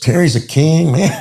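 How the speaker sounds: mock Puerto Rican male accent. Retelling a face-off where Carlos speaks up, imitating Carlos's Puerto Rican accent. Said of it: "He was Puerto Rican with his accent".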